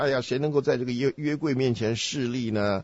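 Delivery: plain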